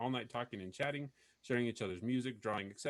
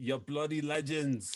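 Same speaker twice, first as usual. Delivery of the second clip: mock Scottish accent, higher and louder; 4 semitones higher, 6 dB louder than usual. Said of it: "Michael says that's Scottish".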